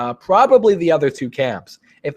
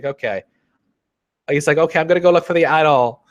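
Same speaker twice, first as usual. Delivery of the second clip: normal talking voice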